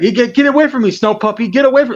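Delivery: shrill, very high-pitched, insistent hammering repetition. Retelling how Umar Johnson yelled at a dog: imitating Umar Johnson. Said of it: "you know how he likes to repeat things".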